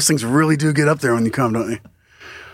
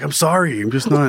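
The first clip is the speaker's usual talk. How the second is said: ordinary talk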